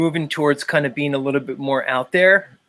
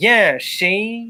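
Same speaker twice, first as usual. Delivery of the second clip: put-on old-timey Chicago mobster voice, pitched higher; 7 semitones higher than usual. Doing an impression of Paul Unslaved as an old-timey Chicago mobster. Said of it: "My Paul Unslaved impression goes to".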